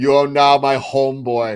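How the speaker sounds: put-on mixed Austrian and Jamaican accent. Joking about a remake, Austrian Jamaican accent. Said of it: "With his Austrian Jamaican accent".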